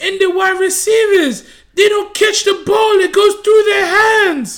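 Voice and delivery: high, loud, shouted mock Brazilian accent rant.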